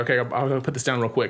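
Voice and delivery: ordinary talk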